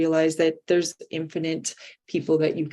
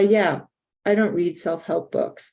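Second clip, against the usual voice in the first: put-on dismissive too-cool tone; 3 dB louder than usual. Reading a quote that mimics someone's remark, in a mocking too-cool tone. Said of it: "in a mocking, I'm too cool tone".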